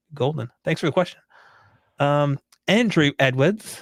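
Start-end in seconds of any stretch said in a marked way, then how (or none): 2.7-3.8 plainly British pronunciation. Reading out a questioner's name, said in a British accent. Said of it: "I don't know why I said that in a British accent".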